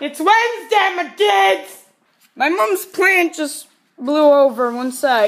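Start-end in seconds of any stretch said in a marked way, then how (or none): 0.0-1.8 full-on, high-pitched excited vlog-intro style yelling. Starting a vlog and greeting viewers, yelling. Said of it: "and I'm yelling again!".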